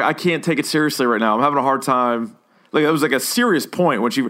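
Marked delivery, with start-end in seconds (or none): none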